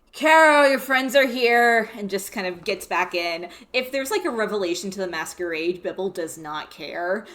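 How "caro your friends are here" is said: high-pitched calling out. Bibble calls back inside to Caro, Bibble yelling to Caro. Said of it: "Bibble just yells".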